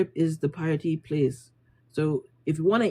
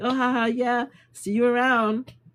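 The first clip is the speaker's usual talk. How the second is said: acted fake laugh, higher; 7 semitones higher than usual. Recounting meeting a man they had to pretend to know, acting out a forced laugh. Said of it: "we just kind of got to smile and laugh".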